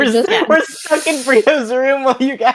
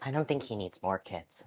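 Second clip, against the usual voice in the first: very quiet, hushed aside; 12 semitones lower, 19 dB quieter than usual. Voicing a character who remarks to a companion, speaking very quietly. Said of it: "very quietly to Wrestling just goes".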